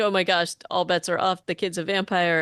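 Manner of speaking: normal talking voice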